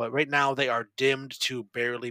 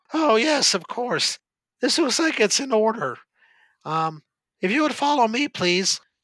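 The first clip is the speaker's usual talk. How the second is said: put-on very high-pitched, cracking, breaking teenage voice; 10 semitones higher, 8 dB louder than usual. Game narrator voicing a man at a desk reading a paper: crackling voice of puberty. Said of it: "he says with his crackling voice brought on by puberty".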